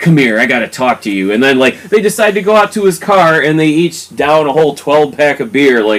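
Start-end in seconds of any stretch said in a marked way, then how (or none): 0.0-1.3 put-on angry tone. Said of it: "So then Robert gets pissed".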